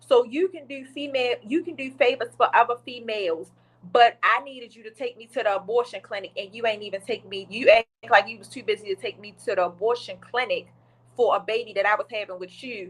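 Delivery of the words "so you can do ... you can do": usual speaking voice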